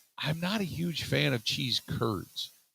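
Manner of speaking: slow, hushed, confiding whisper. Sharing a secret with radio listeners: whispering. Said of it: "I'm gonna whisper this real quick".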